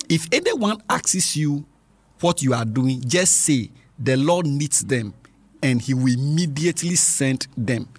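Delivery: ordinary delivery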